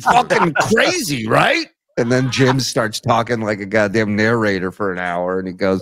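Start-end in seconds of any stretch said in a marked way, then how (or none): 0.0-1.7 casual, animated, high-pitched host voice. Retelling how the host opened an interview, imitating John's interview setup. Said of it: "his setup to him would be like".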